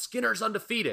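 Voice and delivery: put-on yell, pitched very high and ringing. Retelling a wrestler yelling during the finish: imitating a yell.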